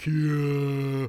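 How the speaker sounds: slow, drawn-out, stretched zombie voice. Voicing a character who has just turned into a zombie: zombified Karate-kun voice. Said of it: "in his new zombified form says".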